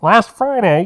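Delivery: put-on very loud, high, old-time radio announcer voice. Showing a co-host how the news headline should be read; old-time radio announcer voice. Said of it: "you got to do it like this".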